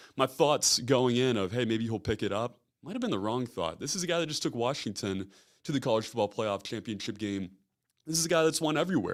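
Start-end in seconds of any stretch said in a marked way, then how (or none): none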